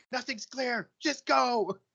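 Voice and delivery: very high, frantic, freaked-out panic. Asked if the room is clear during the escape, a character freaking out. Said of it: "He's freaking out".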